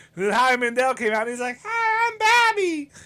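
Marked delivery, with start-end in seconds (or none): 1.7-2.9 very high-pitched cartoon character voice. Retelling a stand-up bit: Bobby voice. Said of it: "He did the Bobby voice".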